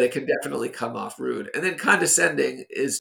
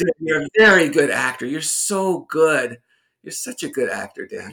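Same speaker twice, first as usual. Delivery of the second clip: sarcastic, mocking fake praise; 3 semitones higher, 5 dB louder than usual. Demonstrating sarcasm to the other speaker: sarcastic praise. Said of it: "this is no longer sarcasm".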